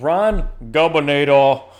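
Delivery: bad, loud, booming put-on Austrian accent. Reading a rum label aloud in a terrible Arnold Schwarzenegger impression. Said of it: "That's my terrible, terrible uh, Arnold Schwarzenegger uh, impression".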